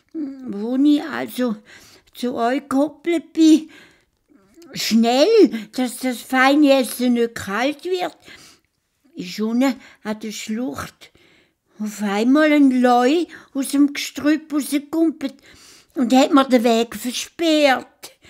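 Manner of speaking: very high, loud, pleading, desperate stammer. A narrator voices a hare explaining himself to a lion, stammering desperately. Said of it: "Der schlaue Has hat seinen Schnauz zwirbelt und ist fröhlich zu seiner Frau und zu seinen Kindern gekoppelt. / sein Schnauzbart zwirbelt und sich auf den Weg gemacht zu der Leuenhöhle. / Der Vater Has".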